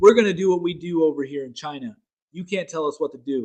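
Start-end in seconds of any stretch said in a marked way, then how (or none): none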